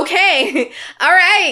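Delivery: tight voice barely holding together.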